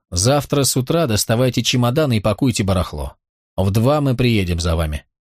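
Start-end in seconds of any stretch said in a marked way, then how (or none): none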